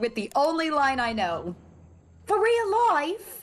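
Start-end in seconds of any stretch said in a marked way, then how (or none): 2.3-3.4 put-on Australian accent, much higher pitch. Asked if this is the listener's favorite accent, doing the only line known: Australian accent. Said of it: "Did I do your favorite accent".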